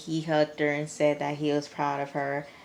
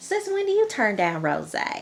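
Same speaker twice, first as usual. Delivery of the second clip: sing-song country twang, pitched up; 6 semitones higher, 4 dB louder than usual. Retelling a conversation, voicing the mom questioning her daughter: mom's country twang. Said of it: "her mom has like a country twang".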